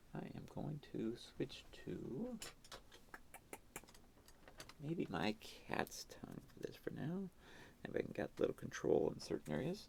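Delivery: whispering and mumbling. Painting on a live stream and describing the brush choice: whispering and mumbling. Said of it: "I'm whispering and mumbling again".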